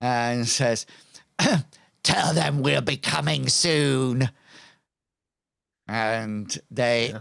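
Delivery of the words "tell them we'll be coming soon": roaring, bellowing creature voice. Game master voicing a flame darkling shouting behind the fleeing party, bellowing minotaur-like voice. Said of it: "he bellows out with his almost like minotaur features".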